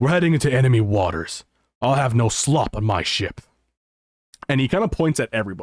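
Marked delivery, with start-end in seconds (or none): 0.0-3.4 put-on grizzled, scarred old ship captain voice. Voicing a grizzled old captain ordering soldiers on deck: grizzled old ship captain voice. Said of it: "this grizzled old man, uh, covered in scars".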